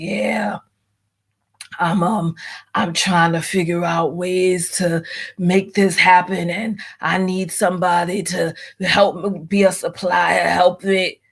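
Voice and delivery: put-on deep raspy voice. Recounting how a man sounded after his breakup, imitating his deep, raspy voice. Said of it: "his voice real deep and raspy".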